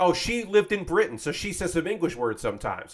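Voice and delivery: ordinary talk, nothing marked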